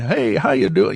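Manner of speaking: put-on homespun, folksy old rancher voice. Retelling a first phone call with a guest: imitating Bob Gimlin as old rancher. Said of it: "he's like the old rancher".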